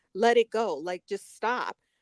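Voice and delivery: plain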